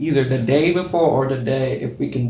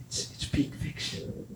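hushed whisper, much quieter. Revealing the best honorable mention nobody has named: whispering. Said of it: "Why are you whispering?".

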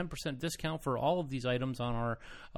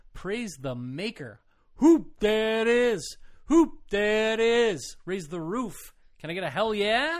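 overly lively and animated, higher and louder; 9 semitones higher, 9 dB louder than usual. Opening a game segment for another speaker: extra animated. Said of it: "I'm being extra animated".

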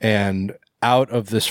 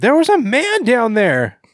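put-on female voice, very high, shrill, sing-song; 5 dB louder than usual. Retelling how she climbed aboard the boat and spoke: put-on female voice. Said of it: "This is my female voice".

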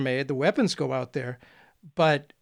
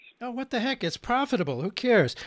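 mocking, pitched-up, sarcastic throwaway tone; 7 semitones higher than usual. A speaker discussing bombings with US-supplied aircraft drops in a remark, sarcastic. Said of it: "sorry for the little sarcasm there".

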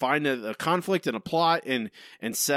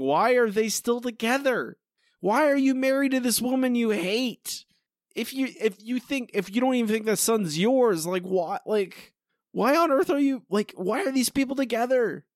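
play-acted, full-on, high-pitched screaming outburst; 9 semitones higher than usual. Retelling own reaction while watching the episode: imitating own screaming. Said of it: "I'm just screaming, I'm like".

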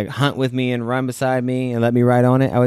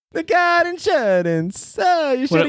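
put-on Italian accent, pitched much higher. Imagining a big riding gecko with an Italian accent, voicing Lizzolio. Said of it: "his gecko has an Italian accent".

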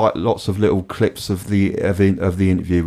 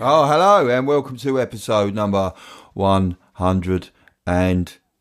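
robot-like delivery, higher; 3 semitones higher than usual. Opening a podcast episode intro: robotic voice. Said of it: "I've started turning into a robot lately when I do the intros".

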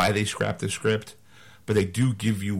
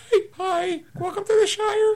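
put-on, very high, squeaky little-folk voice. Imitating little people welcoming you to the Shire, high-pitched little-person voice. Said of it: "kind of have a high-pitched voice?".

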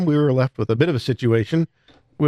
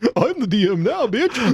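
daft, goofy, pitched-up put-on silly voice; 6 semitones higher than usual. On a podcast, a player is asked to say his line in a goofy voice. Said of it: "Richard and your goofy voice say".

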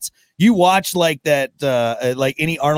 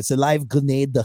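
light, faint put-on Dutch accent. Trading versions of a quoted line, repeating it in a slightly Dutch-tinged put-on accent. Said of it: "a little Dutch in there".

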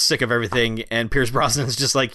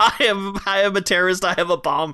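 high-pitched, play-acted, stadium-style shouting; 7 semitones higher than usual. Retelling a movie scene where a character shouts to clear a stadium: imitating a character shouting. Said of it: "starts shouting terrorist generic bullshit".

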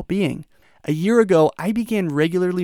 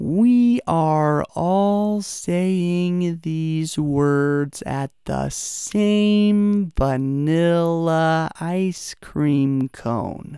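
talking at a slower pace. Leading listeners in saying the words together at the same time, talking slower. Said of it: "I'm now talking slower".

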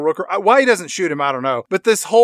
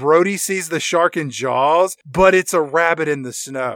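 ordinary talk, nothing marked

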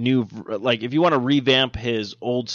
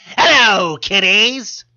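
creepy, very high, loud ghoulish voice; 10 semitones higher, 7 dB louder than usual. Speaker announcing the show's return greets listeners in Tales from the Crypt host impression. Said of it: "That was a pretty good impression".

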